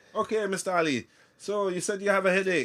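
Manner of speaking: put-on sliding into Irish accent. Retelling a nurse addressing him as Mister Ali: accidental Irish accent. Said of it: "I don't know why I've gone Irish".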